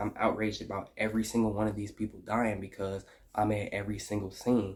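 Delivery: ordinary talk, nothing marked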